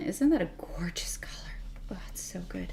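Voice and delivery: soft, hushed admiring whisper.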